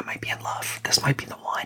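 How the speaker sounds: soft, breathy, wondering whisper under the breath. Retelling his own thought about meeting a girl's parents: whispering. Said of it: "I don't know if you can hear me whispering".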